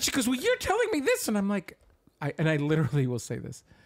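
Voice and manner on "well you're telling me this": put-on very high, curt, sharp barking, snapping voice. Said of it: "she barks at me".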